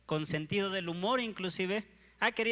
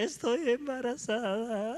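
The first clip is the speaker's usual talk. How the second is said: mock tearful sobbing through the words; 3 semitones higher than usual. Retelling how the speaker's aunt told the uncle she was pregnant, imitating aunt crying.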